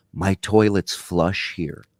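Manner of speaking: deep, hushed stage whisper. Retelling what Sam whispered in the speaker's ear as a movie started: whispering. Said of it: "he leans over and he whispers to me".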